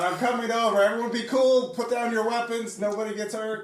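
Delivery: loud calling out. Improvising a hostage standoff scene, calling over to the armed captor, yelling out. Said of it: "I'm yelling out".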